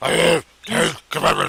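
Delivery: bad raspy superhero voice, very loud. Joking about an actor cast as Moses, speaking his line in a bad Batman voice. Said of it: "he has a bad Batman voice".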